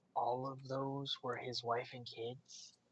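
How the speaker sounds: hushed whisper. In character, confused, the speaker turns to another character, whispering. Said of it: "looks over at Novak and whispers".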